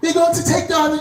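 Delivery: put-on British accent, pitched way up high. Voicing the same friend again: british accent. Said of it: "I gave her a British accent".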